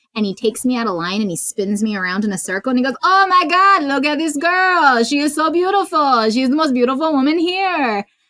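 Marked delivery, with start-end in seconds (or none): 3.1-8.1 put-on strong, loud Eastern European accent. Retelling being pulled out of line at a midnight showing: Tommy Wiseau impression. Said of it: "he has this super heavy, like, Eastern European accent".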